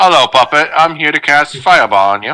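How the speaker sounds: put-on British villain accent. Joking about a British actor as the bad guy: put-on British bad guy accent. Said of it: "he's got a British accent, so maybe he's the bad guy".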